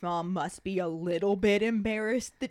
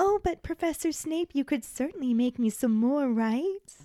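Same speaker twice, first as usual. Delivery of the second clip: put-on sickly sweet girly voice; 5 semitones higher than usual. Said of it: "that description of the sweet girlish voice".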